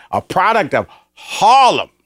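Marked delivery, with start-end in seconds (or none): 1.1-1.8 heavy stress placed on "Harlem". Introducing the next guest on the show: stress on HARLEM. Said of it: "put the emphasis on Harlem".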